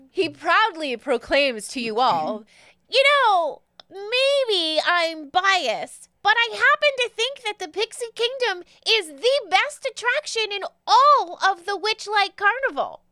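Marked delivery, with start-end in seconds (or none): 2.8-12.9 small high-pitched pixie creature voice. Storyteller voicing a tiny pixie addressing the group, high little pixie voice. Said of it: "his high little voice would be quite deep".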